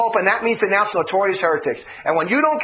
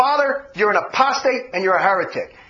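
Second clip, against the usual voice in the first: ordinary delivery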